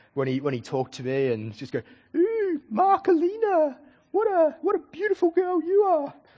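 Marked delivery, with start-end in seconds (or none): 2.2-6.1 mock taunting falsetto, much higher, slower. Recalling a bullying teacher taunting them in class, imitating his mocking falsetto. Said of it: "he'd put on this falsetto voice".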